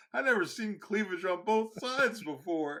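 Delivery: very high, very loud sudden blurt. Retelling what a man said, imitating someone talking very loudly. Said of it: "he goes very loudly".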